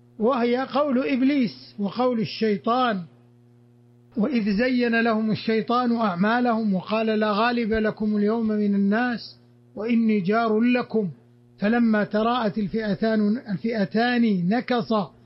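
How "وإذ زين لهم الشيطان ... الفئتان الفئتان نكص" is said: ordinary delivery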